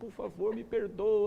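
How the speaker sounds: mournful, suffering begging. Retelling being stopped by a police officer, he acts out sad pleading. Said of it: "triste, aquela cara meio sofredor".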